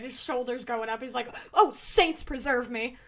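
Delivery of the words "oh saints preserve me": flustered, startled sputtering, louder. Voicing a character startled by a shadow over him: startled sputter. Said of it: "you see him just sputter".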